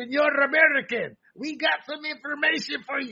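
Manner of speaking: fake Dutch accent, sounds Spanish. A speaker quotes Dutch officials talking to the FBI, in a bad Dutch accent. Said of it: "That's my Dutch accent".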